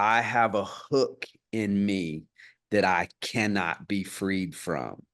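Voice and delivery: grave, composed, slow, solemn calm voice, acted. Retelling a man's line in a moment the speaker loves, imitating a solemn, calm voice. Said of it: "he looks really solemnly and calms his voice".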